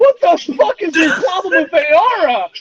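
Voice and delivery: enraged, furious, high-pitched screaming outburst. Voicing angry pterosaurs shouting at a player: screaming in character. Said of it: "they start screaming".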